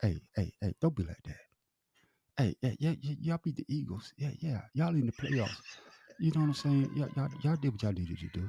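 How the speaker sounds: hushed whisper. Speaker leans in close to the other side's ear, whispering. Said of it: "Let me whisper something to your ear".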